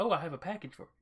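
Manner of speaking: high-strung droid voice. Recounting how the droid first spoke on walking in, protocol droid voice. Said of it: "kind of like protocol droid sound".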